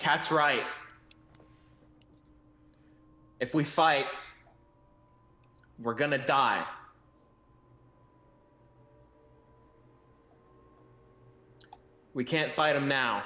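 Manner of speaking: begrudging, reluctant, grudging tone. A player voices the character Six speaking to the party: begrudging. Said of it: "kind of in a begrudging tone".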